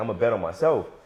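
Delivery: ordinary delivery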